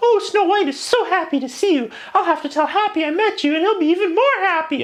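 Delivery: very high, tiny, squeaky voice. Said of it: "They all have their tiny squeaky princess voices".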